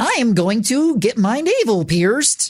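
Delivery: silly, goofy put-on Jersey girl accent. Quoting one of the oddest sentences, in a goofy jersey girl voice. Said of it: "that goofy ass Jersey girl voice".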